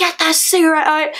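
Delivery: put-on full yell, strong Northern Irish accent. Retelling ordering a girl out of the room, big northern irish accent on, retelling a proper yell. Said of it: "like proper yelling".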